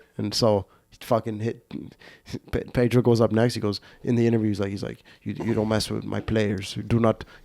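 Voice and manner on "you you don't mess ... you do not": put-on Spanish accent laid on thick. Retelling what the player said in an interview after the hit, in Pedro's thick Spanish accent. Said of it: "He got this thick Spanish accent".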